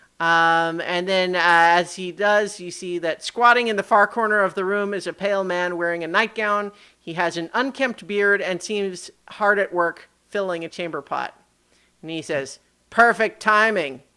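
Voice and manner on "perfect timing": voice dripping with heavy sarcasm. Voicing a pale man in a nightgown greeting the arrivals: dripping with sarcasm. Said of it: "his voice dripping with sarcasm".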